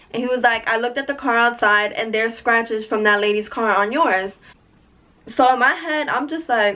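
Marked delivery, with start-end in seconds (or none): none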